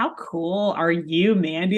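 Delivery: plain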